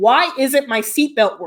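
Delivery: ordinary delivery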